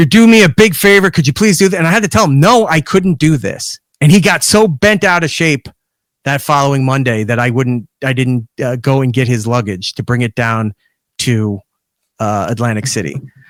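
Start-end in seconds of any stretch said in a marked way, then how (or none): 0.0-1.8 earnest, pleading, leaning hard into it. Retelling a man pressing for a favor: imitating someone pleading. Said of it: "I don't wanna say begging, but he's really kinda leaning into it".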